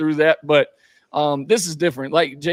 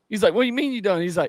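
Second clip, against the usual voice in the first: ordinary delivery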